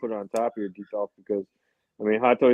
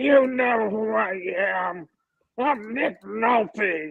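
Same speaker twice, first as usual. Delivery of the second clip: raspy, very high, slow, dragged-out voice; 12 semitones higher than usual. Picturing the actor behind a figure, imitating: raspy Nick Nolte voice. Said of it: "I can just hear his raspy voice".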